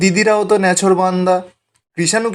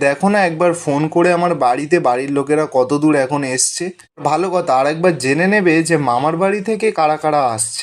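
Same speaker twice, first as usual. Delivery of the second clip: ordinary delivery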